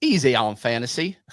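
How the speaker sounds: clumsy, bad put-on Southern accent. Reading out a chat answer from Mister Yellow: bad Southern accent. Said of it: "I'm so bad at accents".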